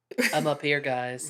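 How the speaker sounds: sweet, low, sugary monotone with no inflection. Imitating the lady cop in the helicopter from the film: imitating a sweet, low monotone. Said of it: "talks in this real sweet monotone".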